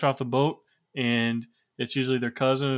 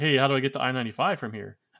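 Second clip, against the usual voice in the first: mimicked broken English. Recounting a lost driver asking directions in Philadelphia, the speaker quotes him, imitating broken English. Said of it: "his best broken English as he can muster".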